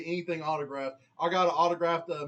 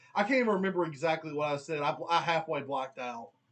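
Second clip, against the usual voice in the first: plain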